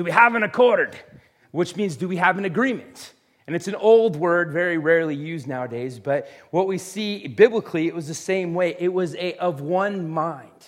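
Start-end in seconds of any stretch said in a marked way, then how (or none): 0.0-1.0 hearty pirate-type voice, loud and pitched up. Quoting the pirates from the older movies, in a Pirates of the Caribbean pirate voice. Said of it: "in their pirate-type voice".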